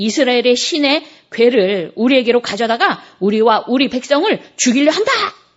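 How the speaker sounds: gentle shout.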